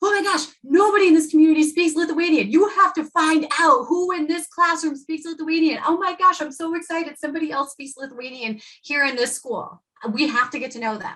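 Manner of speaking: put-on, high-pitched, thrilled, eager dad voice. Retelling a father's reaction in his son's classroom, imitating an excited dad. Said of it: "That dad lit up".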